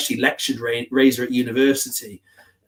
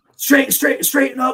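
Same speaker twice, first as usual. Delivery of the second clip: put-on nagging voice, higher pitched; 13 semitones higher, 3 dB louder than usual. Retelling a car ride with a co-commentator: imitating Mick as a backseat driver. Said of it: "backseat driver, like".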